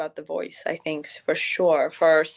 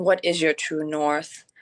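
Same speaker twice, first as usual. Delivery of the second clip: normal talking voice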